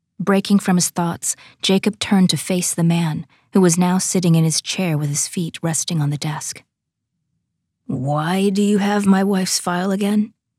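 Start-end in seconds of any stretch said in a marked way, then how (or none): 7.9-10.3 distrustful, wary, suspicious tone. Jacob turns to question the man sitting at his desk, suspicious tone. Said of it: "He asked in a suspicious tone".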